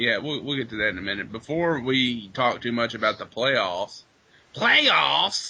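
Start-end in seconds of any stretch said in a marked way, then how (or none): 4.5-5.5 single word pushed high and rough. Talking football with another speaker, doing a Jim Mora impression. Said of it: "that was my Jim Mora impression".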